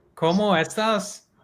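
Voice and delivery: high, slow, mock Scouse Spanish accent.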